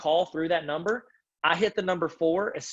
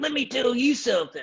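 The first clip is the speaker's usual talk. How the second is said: put-on riled-up, angry parent voice, much higher; 3 semitones higher than usual. Describing a parent calling on Google Voice, imitating a riled-up parent. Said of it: "a parent starts getting riled up".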